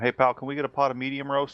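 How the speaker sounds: high, loud, far-carrying hollering shout. Ordering coffee in character across a small coffee shop: shouting across a room. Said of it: "I'm gonna shout over to him".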